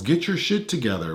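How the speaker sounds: ordinary talk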